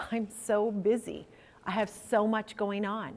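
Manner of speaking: acted low voice, near whimper. Retelling how people answer when asked how they are: imitating a lowered, whimpering tone. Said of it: "almost whimpering tone".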